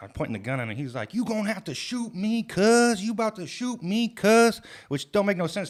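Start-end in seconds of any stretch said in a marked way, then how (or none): 1.1-4.6 very high, loud, stretched-out, drawn-out screaming. Retelling how an intruder screamed while a gun was pointed: imitating a man screaming. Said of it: "this motherfucker's screaming".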